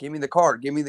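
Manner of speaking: normal talking voice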